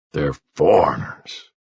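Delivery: deep, dropped-down voice. Reading a story aloud, a man telling news at a grave: low voice. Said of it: "he says in a low voice".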